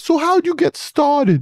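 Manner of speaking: put-on very high-pitched voice with New York accent. A guest mimics how he sounded asking interview questions early on: very high New York accent. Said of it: "Is that how you sounded?".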